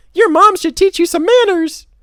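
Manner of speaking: very high loud character voice. A storyteller switching voices for the character Bob: high voice for Bob. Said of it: "He gets the high voice".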